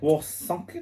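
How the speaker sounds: German-accented speech. Reading out a town name to another speaker: German accent. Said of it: "why did I do a German accent?".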